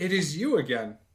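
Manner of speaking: put-on fantasy dwarf-accented voice. Voicing a dwarf leader greeting the party again: dwarvish accent. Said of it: "dwarvish accented voice saying".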